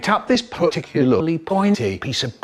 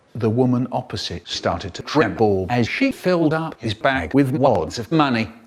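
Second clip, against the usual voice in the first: plain reading voice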